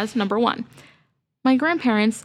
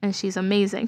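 ordinary talk, nothing marked

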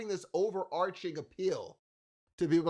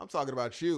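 put-on bored, disinterested voice, lower pitch; 4 semitones lower than usual. Retelling a scene from Atlanta: imitating Paperboy's disinterested tone. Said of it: "that was so disinterested".

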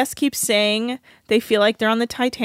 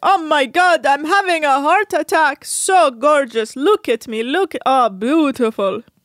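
slow, cheesy, put-on Greek accent; 4 semitones higher, 4 dB louder than usual. Imitating a cheesy photographer on the show, in a Greek accent. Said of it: "your incredible Greek accent".

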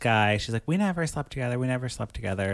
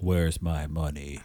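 very deep, low, bossy voice; 8 semitones lower than usual. Acting out the boss in Elizabeth's apartment, in a real deep voice. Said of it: "Got a real deep voice".

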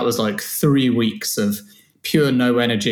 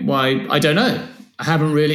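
defensive, halting delivery; 3 semitones higher than usual. Retelling a talk about insomnia, imitating own defensive reply. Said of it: "I started to get defensive and manly about it".

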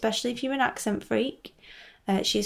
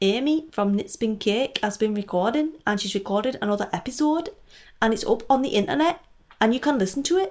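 worst-ever, bad fake put-on Geordie accent; 4 dB louder than usual. Host giving quick news bulletin points to listeners, bad geordie accent. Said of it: "that is my worst ever Geordie accent".

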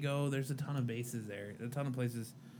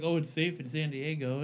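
ordinary delivery

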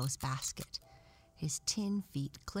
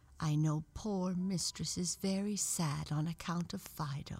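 ordinary delivery

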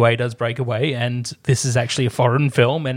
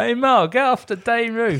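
exaggerated put-on Australian accent, higher; 10 semitones higher than usual. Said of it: "the Simpsons version of Australian accents".

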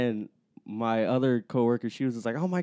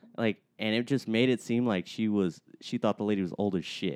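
ordinary talk, nothing marked

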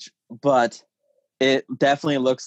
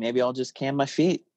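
ordinary talk, nothing marked

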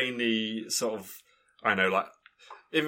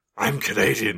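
put-on gruff action-hero voice, louder; 4 dB louder than usual. Mocking how the actor playing John Carter talks, in a gruff John Carter voice. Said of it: "But he's doing a voice like this".

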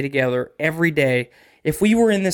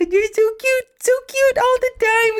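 put-on voice used for talking to a baby. Discussing parents who baby-talk their kids, the speaker demonstrates baby talk. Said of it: "So if I talk to you like this".

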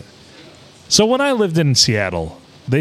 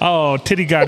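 usual speaking voice

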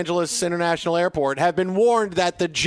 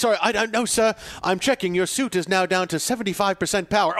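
put-on English accent. Cosplay bit, answering as Jarvis about the suit, in an English accent. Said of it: "You're English accent, right?".

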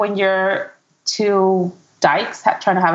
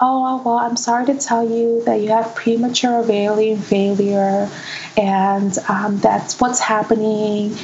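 put-on soft, soft-spoken voice; 2 semitones higher than usual. Retelling what the doctor told Rosa, imitating a soft-spoken doctor. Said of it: "she went to like a soft voice".

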